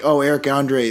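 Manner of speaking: ordinary delivery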